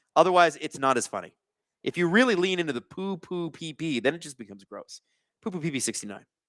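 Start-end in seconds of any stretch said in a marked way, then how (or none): 5.4-6.2 rapid-fire blur of syllables, as fast as possible. Showing how to read a chat name: said as fast as possible. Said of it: "as fast as possible".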